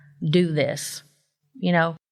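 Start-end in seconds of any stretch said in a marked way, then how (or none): 0.2-1.0 imitated very stern, loud voice. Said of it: "very stern".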